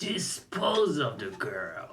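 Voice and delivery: sinister, slow, swooping evil-villain menace. Mocking a game character who says everything like a villain: imitating an evil villain tone. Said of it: "He just said everything in this tone".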